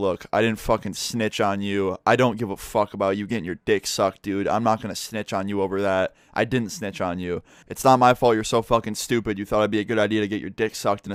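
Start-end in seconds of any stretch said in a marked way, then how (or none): none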